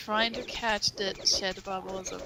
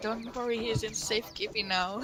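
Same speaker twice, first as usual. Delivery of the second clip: ordinary delivery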